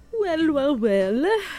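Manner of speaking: spooky vampire voice. Asked what's on today's list, answering in a vampire voice. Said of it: "Why'd you sound like a vampire?".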